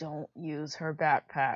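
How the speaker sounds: hushed, half-whispered voice. A character half-whispers aside to 1092; half-whispering. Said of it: "I whisper to 1092".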